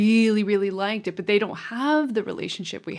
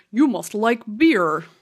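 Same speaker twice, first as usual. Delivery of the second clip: put-on American accent, whispered. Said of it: "rectify my terrible American accent".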